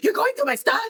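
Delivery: very high, wound-up, worked-up outburst. Retelling a scene where a son catches his mother with his drawings: imitating a worked-up teenager. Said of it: "now he's, like, back on ten".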